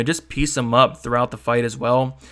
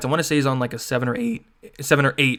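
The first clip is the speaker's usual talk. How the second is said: voice breaking and cracking mid-phrase. Speaker listing a fighter's stats and win streak, voice cracking. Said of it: "Excuse my voice cracked".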